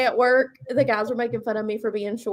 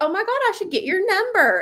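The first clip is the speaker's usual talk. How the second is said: high, fake girlish voice; 9 semitones higher than usual. Retelling how a woman asked a man for his number, in a fake girly voice. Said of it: "she does a fake girl voice".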